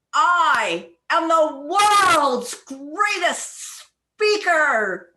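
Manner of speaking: over-the-top, loud, exaggerated burst of energy and emotion. Showing listeners how to say the practice sentence, energetic and emotional. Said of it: "say it with energy and emotion".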